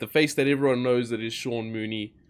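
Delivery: ordinary talk, nothing marked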